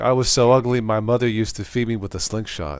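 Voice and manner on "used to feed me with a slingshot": normal talking voice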